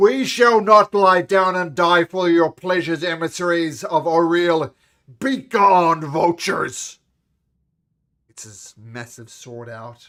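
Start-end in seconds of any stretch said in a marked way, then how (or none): 0.0-7.0 defiant, very loud, high-pitched shout. Voicing a tall figure calling out to emissaries: calling out defiantly. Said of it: "A tall figure among them calls out".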